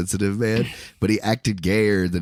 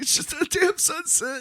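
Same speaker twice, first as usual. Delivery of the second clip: put-on very high-pitched, tearful crying sob; 4 dB quieter than usual. Retelling a movie scene: imitating someone crying. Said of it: "he just starts fucking crying".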